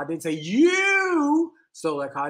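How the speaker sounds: slow, with heavy stress on "you". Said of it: "each time I put the inflection on a different word".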